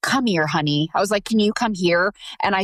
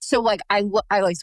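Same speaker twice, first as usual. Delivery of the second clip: ordinary talk, nothing marked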